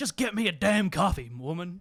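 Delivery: play-acted, loud, booming, slow, drawn-out snapping. Retelling how the police chief snapped at his wife: imitating Reed snapping at his wife. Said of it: "he goes".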